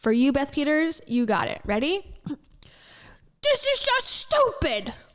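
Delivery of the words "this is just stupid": very high pitch with a swinging melody. Asked to say a line, the speaker does a Dave Ramsey impression. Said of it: "That's my Dave Ramsey impression of saying".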